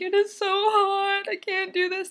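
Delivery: acted very high, slow, stretched tearful sobbing whine. Retelling sitting at the computer in a hot apartment: imitating own past crying. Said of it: "literally crying".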